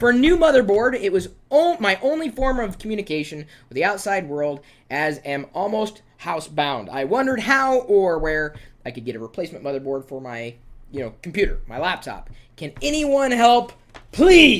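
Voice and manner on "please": word please leaned on with heavy stress. Reading a written request for help aloud: stress on please. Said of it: "hence my emphasis on the word please".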